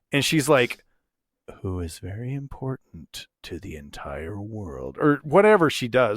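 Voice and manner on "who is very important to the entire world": barely audible, very quiet, low half-whisper. Retelling a book scene where she speaks so only one character hears, half-whispering. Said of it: "she like whispers it as silently as she can".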